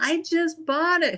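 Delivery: yelled, drawn-out and high-pitched. Retelling how people reacted after buying an item: imitating people yelling. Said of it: "the people are yelling at me like".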